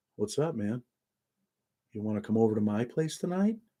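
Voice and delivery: strange, overly relaxed friendliness. Imitating how the character talked when inviting people over: imitating Dahmer's voice. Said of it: "his voice, the way he was talking".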